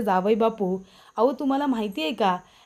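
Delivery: plain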